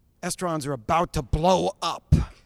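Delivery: big, full headline announcer voice. Reading out a big headline in full announcer voice. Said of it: "I did that in the full announcer voice".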